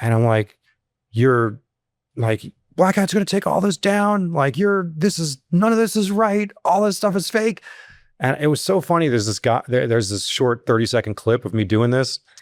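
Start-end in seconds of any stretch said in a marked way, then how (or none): 2.7-7.6 mock furious outburst, very high-pitched yell. Retelling how he stood up at a talk: imitating himself yelling angrily. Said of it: "I just started yelling at him".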